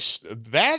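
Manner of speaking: normal talking voice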